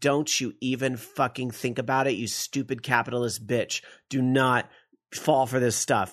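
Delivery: plain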